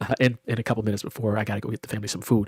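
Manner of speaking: talking really fast, rushed rattle.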